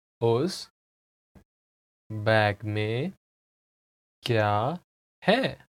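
very slow, halting, broken-up speech in Hindi. In a Hindi lesson, the speaker repeats a sentence for the listener, slow careful repetition. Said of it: "I'll say it again slowly".

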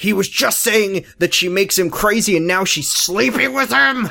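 muted, mild, yell-like outburst. Recapping a show scene, one character yells to another, retelling a yell. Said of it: "and then Ben yells".

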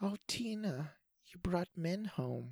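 put-on soft, high, gentle murmur with New York accent. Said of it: "she's like soft-spoken, but she has a gentle, adorable New York accent".

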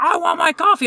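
mock yelling, very high pitched and shrill. Retelling how a man yelled about his coffee: imitating someone yelling. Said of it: "we're both just yelling at each other".

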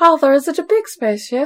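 put-on young boy voice. Mocking a scene before Arrakis, the speaker asks Father about the spaceship in a young Paul voice. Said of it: "when I do my full voice".

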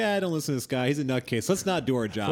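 ordinary delivery

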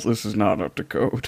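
mumbled, muttered quietly under the breath. Narrating a scene where a character checks a box, mumbling.

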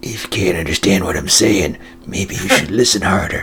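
very deep, barely audible impression voice. Imagining what Steven Seagal would say to a friend: Steven Seagal impression. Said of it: "and just go".

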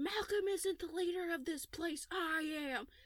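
play-acted, high-pitched yelling. Retelling a show scene where Quinn yells at the guards: imitating Quinn yelling. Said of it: "yelling at these people".

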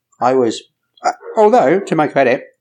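words muffled, talking through a mouthful. Explaining to the others why they missed the podcast, eating while talking. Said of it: "I'm eating".

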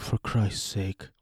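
slow, soft scoffing.

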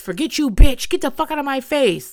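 all-out high, loud screaming outburst. Retelling what Kamaya screamed during an argument: retelling a scream. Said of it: "Kamaya finally screams".

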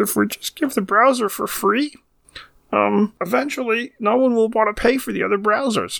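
put-on very high, squeaky voice. Telling the Microsoft browser story, doing a Bill Gates voice. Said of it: "I'm going to do my Bill Gates voice".

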